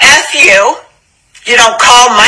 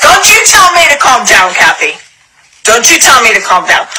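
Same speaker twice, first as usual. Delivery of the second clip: furious, angry growling outburst. Telling someone on the phone not to tell her to calm down: angry growling. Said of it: "I'm growling 'cause I'm pissed".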